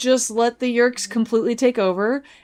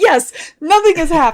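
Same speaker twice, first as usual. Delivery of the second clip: mock enthusiasm, loud, high and eager; 5 semitones higher, 6 dB louder than usual. Repeating the other speaker's line back: imitating enthusiastic delivery. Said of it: "The enthusiasm with which you said that".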